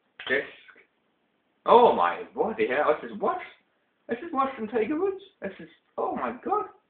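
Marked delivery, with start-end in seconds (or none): 1.7-6.7 very high, climbing, shocked outburst. Reviewing a disc, the speaker reacts in a high-pitched shocked voice. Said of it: "My voice is going high enough because I'm that shocked".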